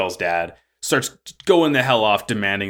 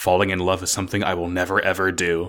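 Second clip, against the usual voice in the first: put-on deadpan, serious delivery; 3 semitones lower than usual. Retelling an anime scene where a character is asked if he's in love: mock-deadpan as Elan. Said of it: "deadpan serious goes".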